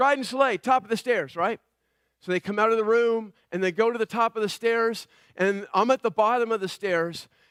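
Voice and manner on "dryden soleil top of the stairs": usual speaking voice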